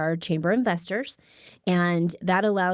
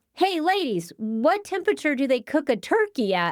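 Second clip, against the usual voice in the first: high, swooping yell, called out loudly; 7 semitones higher than usual. Retelling how the chief called out across the office: imitating a yell. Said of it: "he yells out".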